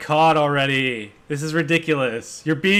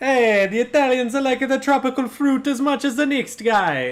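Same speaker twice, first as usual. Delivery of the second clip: high, put-on Jamaican accent; 10 semitones higher than usual. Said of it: "now it goes back to Jamaican again".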